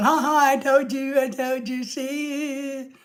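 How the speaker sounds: slow, laughing, with "see" drawn out. Imitating Lorelai laughing at being proved right: imitating Lorelai laughing. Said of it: "I know Lorelai's laughing, going".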